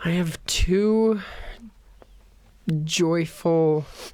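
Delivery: slow, drawn-out sarcastic tone. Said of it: "You're being sarcastic".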